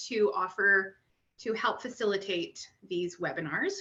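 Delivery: ordinary delivery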